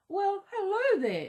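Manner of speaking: smooth, silky wolf voice. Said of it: "said the wolf in a silky voice".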